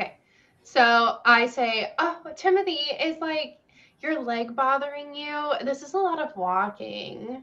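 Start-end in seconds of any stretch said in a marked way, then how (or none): 2.0-7.4 playful, flirtatious tone with lightly raised pitch. Playing a character walking with Timothy in the woods: flirty.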